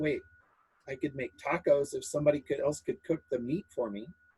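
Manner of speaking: quiet, muttered under the breath, half to oneself. Player speaks as Cindy at the game table, muttering under her breath. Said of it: "Cindy says under her breath".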